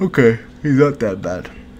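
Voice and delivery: mid-yawn. Narrating a card match for a video, saying this through a yawn. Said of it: "Sorry, I yawned".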